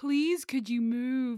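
loud, drawn-out, heavily sarcastic mock-polite tone. Retelling how a man asked a woman to move, imitating a sarcastic request. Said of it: "so sarcastic".

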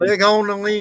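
shouting. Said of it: "I think it helps if I yell".

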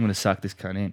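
ordinary talk

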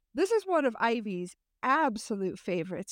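sarcastic, ironic, tongue-in-cheek swooping sing-song. Introducing the next phrase on the list to Ivy: sarcastic. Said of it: "I am being sarcastic here".

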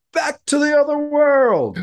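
high-pitched put-on Irish villager.

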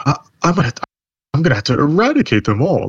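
growl stripped of its bottom end. Imitating a wrestler's backstage line, voice without its bass. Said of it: "she lost the bass in her voice".

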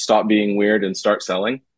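ordinary talk

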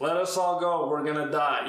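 put-on sarcastic tone. Retelling a disciple's line as first read it: imitating Thomas sarcastically. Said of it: "He's being super sarcastic".

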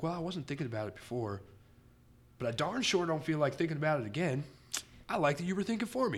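put-on Middle American accent. Act out people who don't live a free-thinking lifestyle, impersonating a Middle American accent. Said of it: "my impersonation of your accent".

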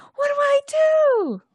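very shrill, loud panicked shout, "do" stretched out. Facing a dragon, Winley yells to Isolt, panicked yell. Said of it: "she yells to Isolt".

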